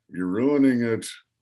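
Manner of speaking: imitated muttering, put-on muttered aside. Retelling a co-star's jab during a scene: imitating Marty muttering under his breath. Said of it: "under his breath".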